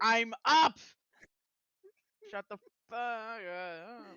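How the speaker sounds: very loud, angry, furious yell, stretched upward. Voicing an angry character woken for watch, shouting. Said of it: "She's like".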